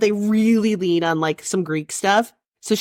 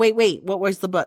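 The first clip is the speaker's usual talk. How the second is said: usual speaking voice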